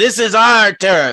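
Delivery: loud, contemptuous, sneering goblin-like monster voice. Voicing a hobgoblin who marches into a room: sneering hobgoblin voice. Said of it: "sneers, and looks around at all of these and says".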